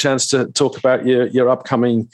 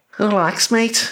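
put-on Scouse accent, much higher; 8 semitones higher than usual. Asked to say relax in their best Scouser accent: best Scouser accent. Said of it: "give us relax in your best Scouser accent".

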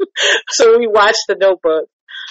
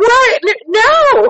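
screaming yell, pitched higher; 14 semitones higher, 3 dB louder than usual. Showing how one reacts to movies at home: imitating screaming at the screen. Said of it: "I be in here screaming at the screen".

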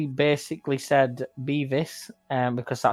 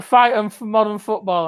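put-on drunk shouting, higher and louder; 8 semitones higher, 7 dB louder than usual. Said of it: "just drunk out of his eyes".

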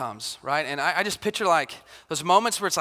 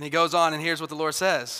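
plain

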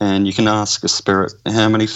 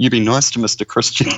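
put-on Irish accent, imitated woman's voice; 2 semitones higher than usual. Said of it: "an Irish lady's voice saying".

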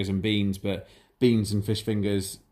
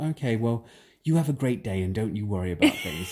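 put-on patronizing, condescending tone, as if to small child. Retelling how a coworker checked on the speaker: imitating someone talking to a toddler. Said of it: "talking to me like I'm three years old".

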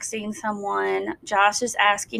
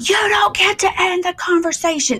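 put-on scream, higher and louder; 10 semitones higher, 5 dB louder than usual. Retelling how a dad screamed at his son: imitating a father screaming. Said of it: "He's screaming".

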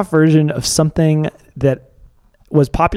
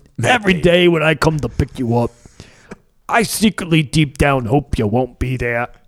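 bad, poorly done fake construction-worker, working-class accent. Acting out what a man says, in a bad construction-worker accent. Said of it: "My accents are so bad".

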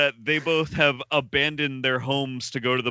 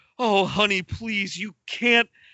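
high-pitched, desperate, begging plea; 7 semitones higher than usual. Retelling a film scene, acting out the wife pleading with her husband. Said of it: "just desperate".

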